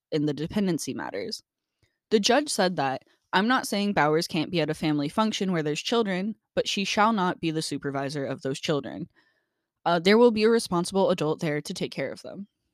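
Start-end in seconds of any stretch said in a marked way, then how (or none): none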